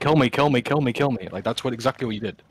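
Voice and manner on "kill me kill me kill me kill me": put-on screaming, repeated over and over. Speaker tells the listener how he ran in, imitating someone screaming.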